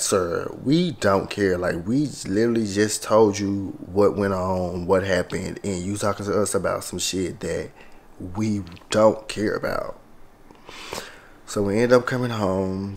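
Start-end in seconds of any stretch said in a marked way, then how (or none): none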